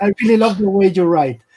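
steady put-on Russian accent. Speaker repeating a viewer's question to Mr. Zdarsky, Russian accent. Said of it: "now I have the Russian accent for the whole question".

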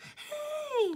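"hey" drawn out at very high pitch. Trying the Kirby cry again, a better take: better Kirby impression. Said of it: "There's a better impression".

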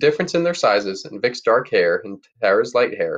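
ordinary delivery

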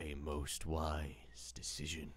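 deep, very low, hushed, barely voiced whisper. A game master voicing Death as it takes a player's coin: Death whispering. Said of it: "He whispers to you".

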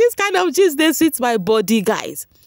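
words broken by laughter. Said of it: "I can't stop laughing".

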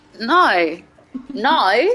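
showy put-on Australian accent. Showing a friend a put-on Aussie accent on one word: put-on Aussie accent. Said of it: "You wanna hear my Aussie accent?".

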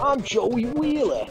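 put-on Brooklyn accent. Trying out a Joey Wheeler voice with some Brooklyn added. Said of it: "A little bit Brooklyn added in".

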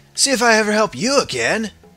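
put-on surfer dude voice. Showing voices they have tried for a character: surfer guy voice. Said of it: "it's kind of the surfer guy voice".

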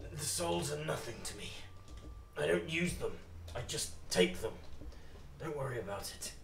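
raspy, quiet villainous voice. Voicing the master as he answers a question, in a hoarse voice. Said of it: "and you can see your master is pulling it back. ... His voice is much more hoarse".

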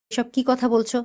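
ordinary talk, nothing marked

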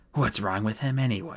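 plain

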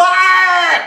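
high, loud screaming man's voice.

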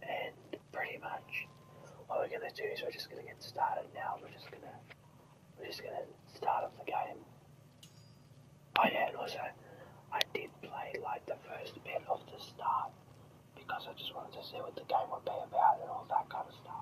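steady, unvoiced whisper.

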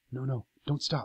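half-whispered, barely breathed, hushed. In a story, a man hiding behind a tree with a woman, half-whispered. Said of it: "he whispered".

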